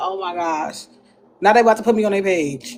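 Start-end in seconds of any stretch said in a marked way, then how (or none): 0.0-0.9 words spilling out through laughter, exclaiming. Retelling being recorded while hugging a tree: imitating own past laughing. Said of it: "I started laughing like".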